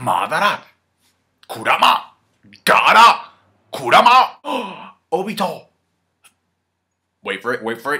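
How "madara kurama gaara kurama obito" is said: loud, high, slow, drawn-out bellowing shout. Recapping an episode, the speaker imitates Naruto throughout it: Naruto impression. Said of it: "This is my impression of Naruto".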